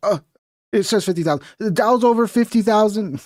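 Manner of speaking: hesitant, halting delivery. Teasing the other speaker for pausing while reading a figure, mocking unsure hesitation. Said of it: "the way you paused there, because you weren't sure".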